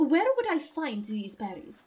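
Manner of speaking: loose, nonspecific European accent attempt. Player asking a question in character during a role-play game: vaguely European accent. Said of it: "It's vaguely European".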